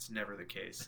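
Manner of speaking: soft, very quiet aside.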